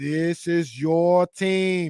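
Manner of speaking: heavy Boston accent, very slow and drawn out. Guessing that Vivek is from Boston: heavy JFK Boston accent. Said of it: "heavy J F K vibes".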